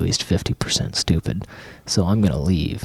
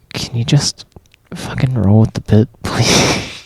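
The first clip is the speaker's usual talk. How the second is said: exasperated, frustrated, raised and pitched-up voice; 5 semitones higher, 7 dB louder than usual. Talking to the other podcast host mid-recording, annoyed and mad. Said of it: "you mad, bro?".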